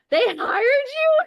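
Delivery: incredulous squeal, very high, loud and slow.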